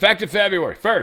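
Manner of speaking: play-acted very high, loud caps-lock shouting. Reading aloud an all-caps post, announcing it: reading all-caps post as yelling. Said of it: "I'm yelling".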